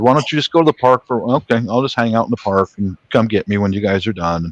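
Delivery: ordinary talk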